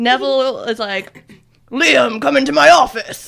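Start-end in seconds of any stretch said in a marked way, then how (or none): 1.7-3.3 commanding boss-like voice. Retelling a scene where the detective calls Liam in: impression of Neville. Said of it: "Spot on impression".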